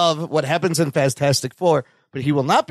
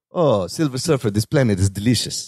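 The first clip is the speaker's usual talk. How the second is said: put-on sexy voice, pitched lower; 5 semitones lower than usual. Imagining a giant planet-eater speaking in a sexy Antonio Banderas voice. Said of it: "Imagine that voice on Galactus".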